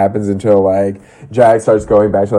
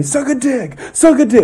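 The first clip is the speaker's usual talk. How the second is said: acted, very high-pitched scream, repeated over and over. Retelling how two people were screaming at one another, imitating Kristen screaming. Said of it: "Kristen screaming".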